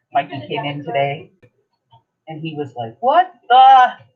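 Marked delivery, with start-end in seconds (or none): 2.9-3.9 very high-pitched, very loud, shrill hollering. Retelling how Mikey came in today, imitating Mikey hollering. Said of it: "And he's hollering".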